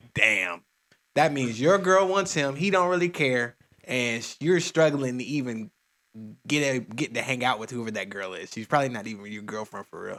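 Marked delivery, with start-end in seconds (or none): none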